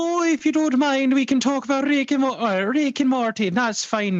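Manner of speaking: put-on Swedish accent, very high and loud. Attempting a Scottish accent, slipping into a Swedish accent instead. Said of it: "I just went Swedish there".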